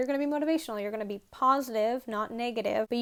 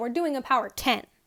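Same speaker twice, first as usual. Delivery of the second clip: low, firm, decisive voice, falling cadence; 4 dB louder than usual. Teaching how to call commands to rowers, demonstrating the right way: decisive, not a question. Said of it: "be be decisive".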